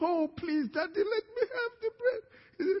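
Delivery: acted-out very high, tearful, crying voice. Acting out a son on his knees begging his father: acted crying plea. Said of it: "Why are you crying about it?".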